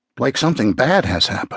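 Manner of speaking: ordinary delivery, nothing marked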